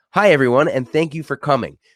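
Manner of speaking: smiling while talking. Showing lawyers how to greet an audience, smiling while talking. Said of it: "the smile".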